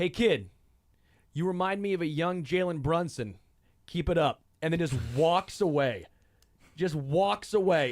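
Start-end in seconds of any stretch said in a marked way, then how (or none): 0.0-4.4 acted solemn, sincere, serious, earnest tone. Retelling what a drunk player told a kid: imitating a serious voice. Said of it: "serious voice".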